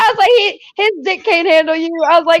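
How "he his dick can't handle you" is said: put-on rowdy, brash, hollered, taunting voice. Retelling leaving a concert, calling to an arguing woman: retelling a scream. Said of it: "I was screaming at her".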